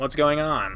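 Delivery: ordinary delivery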